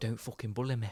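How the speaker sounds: put-on Nottingham accent. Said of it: "That's such a good Nottingham accent".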